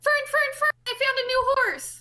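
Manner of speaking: very high, thrilled, excited shouting. Bursting into the tavern in character, calling for fern: shouting excitedly in character. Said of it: "I start shouting".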